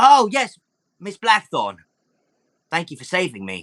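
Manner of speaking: grateful goblin character voice. Voicing a freed goblin who thanks the rescuer: goblin voice. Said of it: "The goblin comes up".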